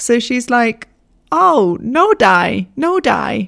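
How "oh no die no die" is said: very slow, bad, fake foreign-accented broken English. Retelling the moped driver's reply, a bad impression of her limited English. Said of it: "Sorry if that's a really bad impression".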